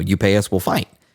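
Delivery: normal talking voice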